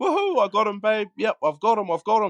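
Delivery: shrill, very high, yelled shout. Retelling what he yelled out to his missus: retelling a yell. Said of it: "I yelled out".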